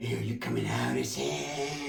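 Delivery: very low, very quiet, slow-motion menacing delivery. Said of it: "It was like fucking slow motion".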